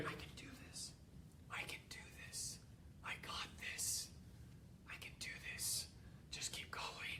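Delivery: faint, barely audible, almost inaudible whisper. Retelling a struggling woman's words to herself: imitating someone barely whispering. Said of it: "almost hear her just barely whispering".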